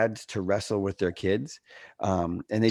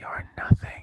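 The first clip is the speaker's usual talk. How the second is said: little secret whisper, very close. Retelling what a small boy said in someone's ear: imitating a child whispering. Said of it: "he whispered in my ear".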